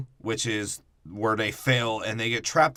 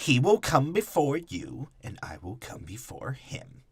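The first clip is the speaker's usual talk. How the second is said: put-on valley girl voice, higher; 3 semitones higher than usual. Quoting the Emperor's line about who will come before whom: the Emperor as a Valley Girl. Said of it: "And like a Valley Girl".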